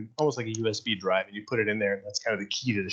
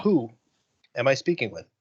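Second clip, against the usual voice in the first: ship computer voice, louder; 2 semitones higher, 4 dB louder than usual. Voicing the ship's voice greeting the crew at startup: ship computer voice. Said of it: "voice comes across. And, uh, he says".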